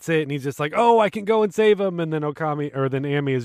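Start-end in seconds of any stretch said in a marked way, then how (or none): 0.8-2.0 put-on excitement, higher and louder. Retelling how one character reacts when he gets it, acting out real excitement. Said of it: "Kokiri is like real excited".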